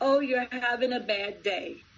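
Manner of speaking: put-on, pointed, sarcastic remark. Recalling a rude pharmacy worker, repeating a past remark: retelling a sarcastic remark. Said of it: "I sarcastically said to her".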